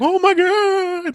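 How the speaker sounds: put-on high, excited French accent, "god" stretched. Show how someone who loves the movie reacts to its name, imitating Wing in a French accent. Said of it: "in a French accent".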